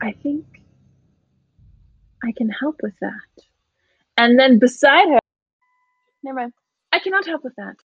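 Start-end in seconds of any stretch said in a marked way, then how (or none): 0.0-3.4 very quiet, lower pitch, slower pace. Voicing Sumi's line in the story, very quietly. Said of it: "very quietly".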